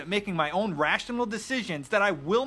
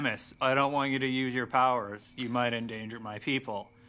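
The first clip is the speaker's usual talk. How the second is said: very low, flat, level monotone drone; 9 semitones lower, 3 dB quieter than usual. Criticizing a game's voice acting, mimicking Adam's line to Samus, monotone. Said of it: "also very monotone".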